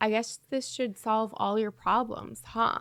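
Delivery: dark, foreboding, very ominous delivery. Recapping a scene where a building burns, imitating Claire's ominous tone. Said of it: "in a very ominous tone".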